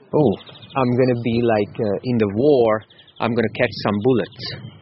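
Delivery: normal talking voice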